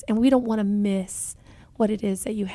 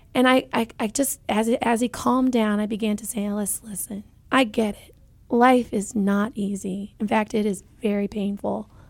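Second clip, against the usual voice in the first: usual speaking voice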